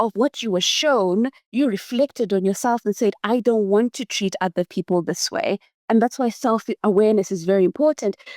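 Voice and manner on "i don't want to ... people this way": usual speaking voice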